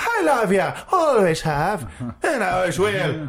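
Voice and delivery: put-on mock Irish accent. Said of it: "I can only do a perfect Irish accent".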